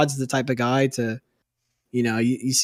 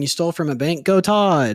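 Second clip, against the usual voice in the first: ordinary delivery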